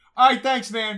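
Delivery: high-pitched, loud, sarcastic tone.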